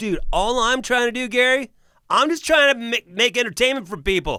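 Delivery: indignant, loud, high-pitched pleading.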